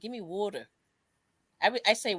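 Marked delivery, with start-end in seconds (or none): 0.0-0.7 put-on Philadelphia accent. Showing how people from Philly say water, in a Philadelphia accent. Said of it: "they say".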